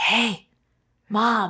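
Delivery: put-on child voice, whispering. Retelling how a child interrupts calls: imitating a child whispering. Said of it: "always coming and whispering at me".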